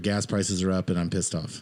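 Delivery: plain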